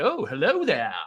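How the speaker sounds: friendly, genial, kindly and welcoming tone. Showing a co-host how it should sound: friendly Obi-Wan Kenobi impression. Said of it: "You gotta get friendly with it".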